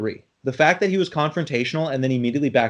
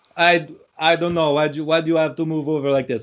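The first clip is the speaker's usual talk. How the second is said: put-on Eastern European accent; 3 semitones higher than usual. Retelling what a man who wouldn't move his car said: eastern european accent. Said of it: "I'm like doing an accent".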